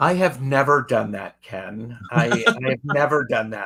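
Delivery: heavy, dripping sarcasm laid on thick. Replying to a guest who admits repeating mistakes, heavy sarcasm. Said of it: "this is sarcasm if you can't feel it oozing".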